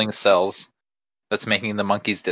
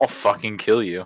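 mock-furious cartoon villain voice. Joking that cartoon villains swore, acting one out: mock-furious cartoon villain. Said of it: "They just get really mad".

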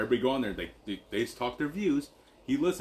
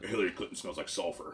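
pitch dropped deep, low, proclaiming delivery; 4 semitones lower, 5 dB quieter than usual. Quoting a radio host to friends: Alex Jones impression. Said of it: "You sound just like him".

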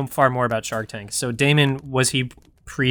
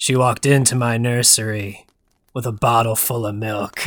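film noir detective narrator voice; 3 semitones lower than usual. Pitching a baby story told like film noir: film noir narrator voice. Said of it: "the film noir".

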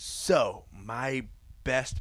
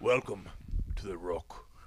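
clumsy, badly done action-hero voice, dropped deep and low; 5 semitones lower, 4 dB quieter than usual. Quoting a line from the film The Rock: bad Sean Connery impression. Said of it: "That was a bad Sean Connery".

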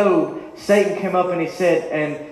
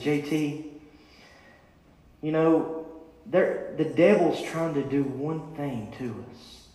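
put-on whisper, quieter; 4 semitones lower, 9 dB quieter than usual. Retelling what Bryce whispered to him, imitating a whisper. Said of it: "he whispered to me".

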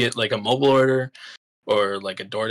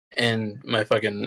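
normal talking voice

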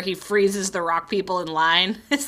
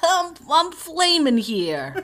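put-on New York accent, much higher pitch; 9 semitones higher than usual. Quoting a character's line from the episode, Flambeau New York accent. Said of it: "I apologize for our New York accents".

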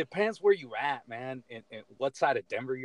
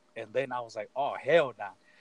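normal talking voice

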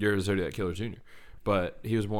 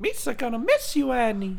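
goofy cartoon alien voice, much higher, louder; 4 dB louder than usual. Speaker riffing with a co-host does a Jar Jar Binks voice. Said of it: "That's a really good impression".

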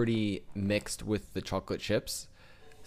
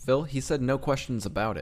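ordinary delivery

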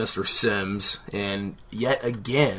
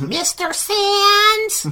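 shrill screech, very high, loud, swooping; 6 dB louder than usual. Talking about a scene, the speaker mimics Mrs. Randall's screeching. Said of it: "with all that screeching of".

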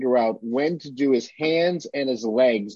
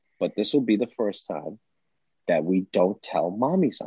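soft, hushed, secretive stage whisper; 4 semitones lower, 4 dB quieter than usual. Retelling half-whispering a secret to the child he held: retelling a half-whisper. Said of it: "And I whispered to him".

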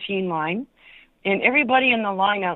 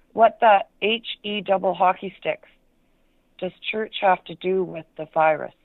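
ordinary delivery

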